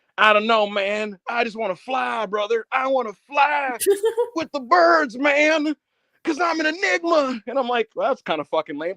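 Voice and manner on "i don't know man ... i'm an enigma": dreamy drawl, pitched up, slow and spaced-out. Retelling Jeff being told to quit drugs and his reply, Jeff Hardy impression. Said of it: "And then Jeff would just be like".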